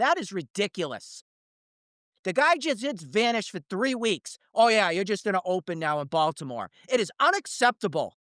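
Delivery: angry, fed-up, high-pitched rant. Speaker complaining about an organization's opener decision, mad. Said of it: "I'm sorry that I'm mad".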